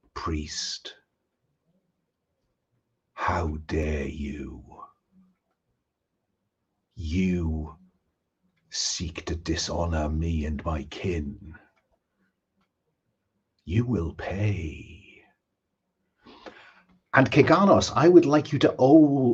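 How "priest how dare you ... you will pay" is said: slow, very hushed, drawn-out whisper. Voicing a whisper heard by a priest character: whispering voice. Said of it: "I want you to hear a whisper".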